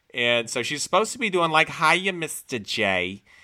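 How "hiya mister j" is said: put-on Brooklyn accent, said slowly. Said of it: "this kind of accent".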